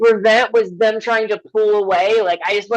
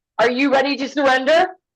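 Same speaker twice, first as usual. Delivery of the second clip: theatrical, grand, declaiming, challenging tone; 4 semitones higher than usual. Playing a role during a parlay in the game, speaking in a booming voice. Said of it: "I could say in a booming voice now".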